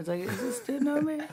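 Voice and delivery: high-pitched, confused, puzzled voice with laughter.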